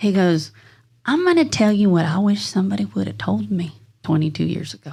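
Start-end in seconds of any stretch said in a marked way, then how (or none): 1.0-4.9 put-on country accent. Retelling advice an older man gave in the office: imitating a country accent. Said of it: "he's got that country accent".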